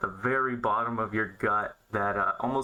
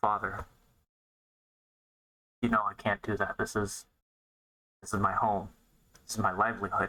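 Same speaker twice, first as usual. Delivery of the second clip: confidential, private, confiding tone. A woman answers her father so only nearby tables can hear: hushed voice. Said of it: "in a much more hushed voice".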